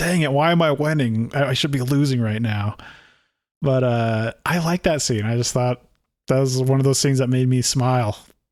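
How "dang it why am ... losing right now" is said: mock crazed voice. Retelling a scene where Odo is mad he is winning: imitating a mad Odo. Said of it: "He's like".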